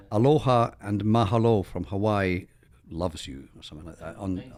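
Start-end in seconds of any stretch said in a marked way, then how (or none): none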